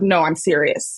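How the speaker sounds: mock abrupt, low deadpan, all joking dropped. Retelling how Sydney Colson switches from joking: imitating Sydney Colson's deadpan. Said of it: "her face is, like, deadpan and she's like".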